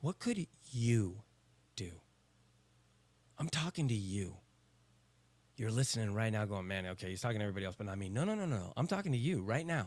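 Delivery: voice brought down a little, sincere. Speaking directly to a single listener, with the voice brought down a little. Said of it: "I brought my voice down a little bit".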